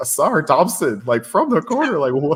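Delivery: high loud amazed call. Retelling a late corner three, imitating Mike Breen's disbelief. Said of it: "hear the disbelief in Mike Breen's voice".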